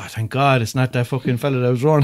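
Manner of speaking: normal talking voice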